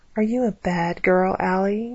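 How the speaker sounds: mocking, teasing whisper. A man whispering in a young woman's ear, mocking whisper. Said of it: "he whispered mockingly".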